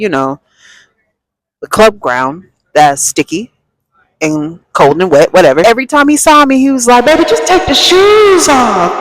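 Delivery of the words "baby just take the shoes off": acted, very high scream at top of lungs. Retelling what a man at the club kept saying: imitating a man screaming. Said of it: "this man is screaming to the top of his lungs".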